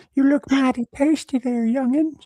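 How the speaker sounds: very high, squeaked-out cartoon voice. Doing a character voice bit, in the Herbert voice. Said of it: "Herbert from Family Guy, bro".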